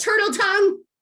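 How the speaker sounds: high, loud yell. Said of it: "You can yell".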